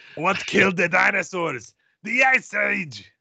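put-on high Austrian accent. Asked for an ice pun for a casting idea, deliver it in Victor Fries Austrian accent. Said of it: "Chill out with an Austrian accent".

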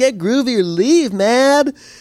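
puny, scrawny, pitiful voice, very high-pitched. Retelling how a woman says it, the speaker imitates a scrawny, pathetic voice. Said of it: "scrawny, pathetic way".

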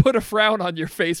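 plain

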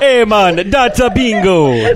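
put-on Jamaican accent. Mocking a co-host's bad German impression by repeating the line in put-on Jamaican accent. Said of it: "the most Jamaican-sounding German".

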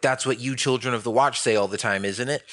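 ordinary talk

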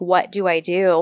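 imitated whisper. Retelling a scene where a character asks what to do: imitating a whisper. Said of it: "kinda whispers".

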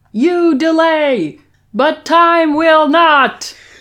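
very slow, loud, high, drawn-out shout. Retelling how he bangs on the two-way glass, retelling a scream. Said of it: "he screams".

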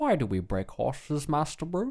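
terrible put-on butler voice with swooping pitch. Joking about a band name with a terrible Michael Caine impression. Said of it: "a terrible Michael Caine impression".

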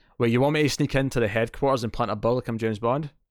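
usual speaking voice

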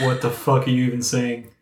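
ordinary delivery

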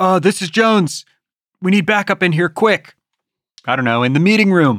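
different voice, up a register. Calling for backup on a walkie-talkie while pretending to be Jones: voice up a register. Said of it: "his voice goes up a, like a register".

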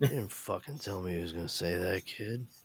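put-on old, weary, grouchy voice, fed up with everything. Repeating a quoted line, sounding old and done with everything. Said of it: "Harrison Ford just sounded, like, fucking just old and done".

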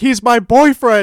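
mock frantic, pleading, high and loud desperate scream. Recounting a movie scene where the actress screams out, retelling Lea Thompson's scream. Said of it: "she screams out".

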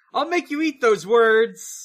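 mock shouting. Narrating a game scene and quoting the hero's retort, retelling Sonic's shout. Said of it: "Sonic shouts".

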